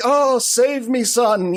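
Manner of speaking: mock very high, very slow, meek and demure. Retelling a movie scene where the stepmother turns meek: imitating a demure plea. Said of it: "like, all demure".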